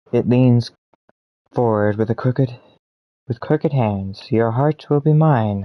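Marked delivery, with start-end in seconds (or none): 4.3-5.6 sibilant, hissing wraith voice. Narrating an adventure, voicing the wraith leaning toward you: hissing wraith voice. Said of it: "the wraith hisses".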